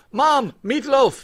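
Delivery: put-on joking British accent, very high and loud. Redoing another speaker's line about the meatloaf, in a joking British accent. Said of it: "Get me the meatloaf in British".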